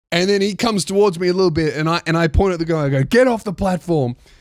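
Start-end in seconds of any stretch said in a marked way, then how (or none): 3.0-4.1 put-on shout. Retelling pointing at the guy across the platform: retelling own shout. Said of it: "I scared the fuck out of her too".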